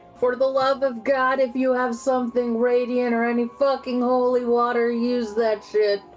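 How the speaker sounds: shouting in a character voice. Voicing a character calling for holy water: Mia screaming. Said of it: "Mia screams".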